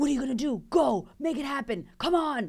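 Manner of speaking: relentless, pushy, full-on motivational man's voice. Voicing the inner voice that pushes to make it happen: imitating a pushy man's voice. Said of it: "this man voice that's like".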